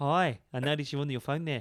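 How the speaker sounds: put-on South African accent. Mimic a man on a bike talking to someone on their phone, in Cycling Mikey's crazy little South African voice. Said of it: "you hear his crazy little South African".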